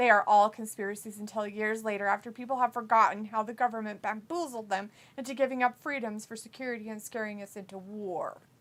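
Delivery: ordinary delivery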